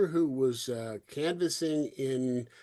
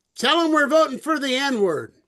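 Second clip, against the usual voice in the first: raised, high-pitched yell; 13 semitones higher, 10 dB louder than usual. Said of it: "the guy yells back".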